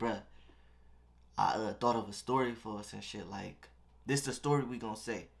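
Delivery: acted-out whispering. Handcuffed in a cop car's back seat, leaning over to bro: retelling a whisper. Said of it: "I'm whispering though".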